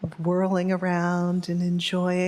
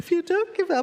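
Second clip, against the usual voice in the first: voice choked with tears, higher; 11 semitones higher than usual. Reading a teaching aloud to listeners, tearing up. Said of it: "right now I'm starting to tear up".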